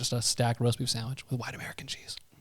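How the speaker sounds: very hushed soft whisper, under the breath. Naming a favorite cold sandwich to the others: whispering. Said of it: "I do like how he whispers it".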